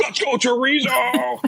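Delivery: put-on dads screaming, very high, cheering.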